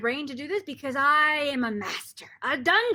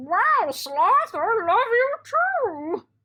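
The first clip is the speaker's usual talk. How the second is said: high, very slow dog voice, "wow" stretched; 6 semitones higher, 3 dB louder than usual. In a voice game, answering as the other speaker's dogs in a put-on dog voice. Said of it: "Your dogs say".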